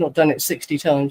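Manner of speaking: ordinary talk, nothing marked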